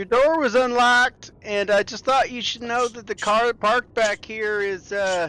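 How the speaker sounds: fake American accent, very high, shrill and loud. Playing a character addressing the players in a game, in a bad American accent. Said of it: "in a very American accent".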